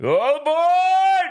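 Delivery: mild, sing-song, swooping, stretched-out holler. Announcing a move on to the NFL topic: screaming. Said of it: "Why did you scream?".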